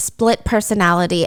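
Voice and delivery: ordinary delivery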